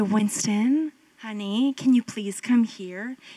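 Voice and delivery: compassionate, affectionate, tender, loving coaxing. Speaker showing how a parent calls a child with compassion, in a tender voice. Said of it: "He's going to respond to my tender voice".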